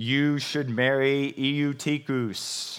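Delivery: heavenly voice of God speaking down from above. Speaker imagining god giving direct instructions, in a booming voice from heaven. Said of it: "the booming voice from heaven going".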